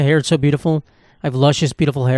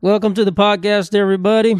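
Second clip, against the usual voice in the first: put-on southern American accent, higher pitched; 7 semitones higher than usual. A host opens the podcast by welcoming everybody in a southern accent. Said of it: "I don't know why I'm speaking with a southern accent".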